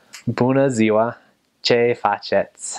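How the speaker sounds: clumsy, slow, heavy non-native Romanian accent. Teaching Romanian pronunciation, showing a bad accent on a greeting. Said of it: "So a bad accent would be".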